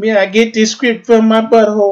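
put-on Jamaican accent, pitched very high. After saying which accents you can do, show what your Vince would be: Jamaican Vince voice. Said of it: "But I'd be a Jamaican Vince man".

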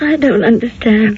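words coming through tears, crying. In a drama, a character speaks while the listener says not to cry, crying. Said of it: "Now, don't cry".

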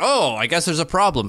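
play-acted, heavily ironic, sarcastic tone. Recounting how someone asked four questions and all answered no, retelling a sarcastic remark. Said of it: "and like sarcastically".

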